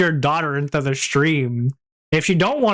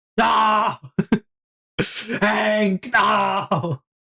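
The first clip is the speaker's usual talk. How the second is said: anguished, crying pleading tone, pitched up; 5 semitones higher than usual.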